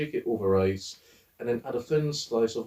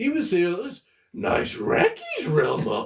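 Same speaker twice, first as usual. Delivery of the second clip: cartoon dog voice, much higher pitch; 9 semitones higher, 4 dB louder than usual. Retelling a bit on how Scooby-Doo would say restaurant names, in a Scooby-Doo voice. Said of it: "how Scooby Doo would say different fast food restaurants".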